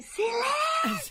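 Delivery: put-on old-fashioned shout, very high and slow.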